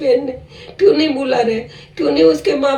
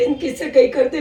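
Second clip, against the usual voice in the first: normal talking voice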